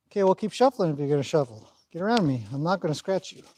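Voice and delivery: ordinary talk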